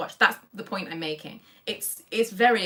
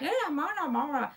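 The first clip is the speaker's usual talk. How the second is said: high, put-on, attempted English accent; 9 semitones higher, 3 dB quieter than usual. Explaining dubbing, the speaker mimics a dubbed voice in an attempted english accent. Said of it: "What I was trying to do was an English accent".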